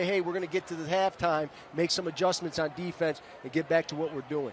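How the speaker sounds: ordinary delivery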